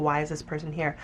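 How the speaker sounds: usual speaking voice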